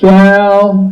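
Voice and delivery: the word shall hit with heavy stress. Retelling how a man at the microphone said it: stress on shall. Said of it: "He said it like this: ... the emphasis was on the word shall".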